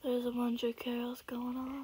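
mock-depressed tone. Apologizing for background noise in a video, the speaker uses a mock-depressed tone. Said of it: "Stop sounding depressed".

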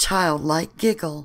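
plain reading voice

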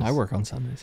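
plain

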